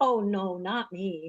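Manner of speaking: sarcastic, ironic tone. Answering a question about avoiding things: sarcastic. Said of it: "There's a little sarcasm for you guys".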